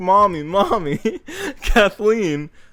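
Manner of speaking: put-on high, tearful sobbing child's cry. Retelling running to mom after a fall, imitating own childhood crying. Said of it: "So then I run downstairs crying".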